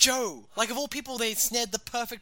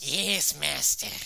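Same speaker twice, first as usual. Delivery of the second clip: rough, raspy, creaky character voice; 8 semitones lower than usual. Showing the best way to get the character's Peter Lorre voice. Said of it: "the best way to get that voice".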